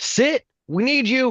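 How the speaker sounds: lifted, very high-pitched call. Playing a character, the speaker answers someone sent to bring them in, with a raised voice. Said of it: "I'll raise my voice and say".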